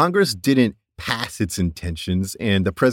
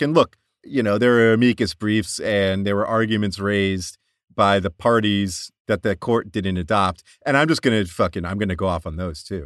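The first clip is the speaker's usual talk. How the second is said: plain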